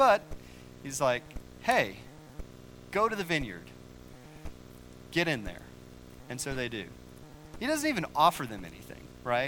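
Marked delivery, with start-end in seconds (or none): 1.6-5.6 play-acted mildly irritated, peeved tone. Retelling the story, the speaker voices the master sending idle workers off, slightly peeved. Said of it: "like he's a little bit peeved".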